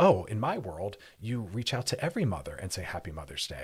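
ordinary delivery

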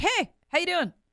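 very high, light, casual voice. Retelling a recorded moment when he drops the sad act: imitating Alec Murdaugh's casual greeting. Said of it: "he breaks, like, sad face character".

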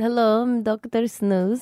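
put-on Eastern European accent. Asked on air for her impression, a co-host introduces herself: Dr. Snooze, Eastern European accent. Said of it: "Mine's his Eastern European cousin".

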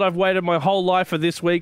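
usual speaking voice

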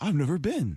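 eager, keenly fascinated, overly interested tone. Retelling meeting a fan-friendly celebrity: imitating Common sounding very interested. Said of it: "he was like".

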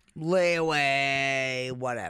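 dreary, gloomy, low, drawn-out, deathly depressing delivery. Asked about buy now, pay later services, answering in a depressing tone. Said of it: "made lay away more depressing than what you just did".

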